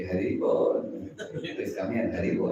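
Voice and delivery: said very sweetly. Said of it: "Haribol is supposed to be said very sweetly".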